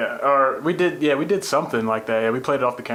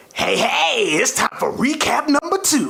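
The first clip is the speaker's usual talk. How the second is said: put-on, pitched-up, high, hyped announcer voice; 12 semitones higher, 3 dB louder than usual. Asked for a ribosome update on request, in Crazy Taxi announcer voice. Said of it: "in the Crazy Taxi voice".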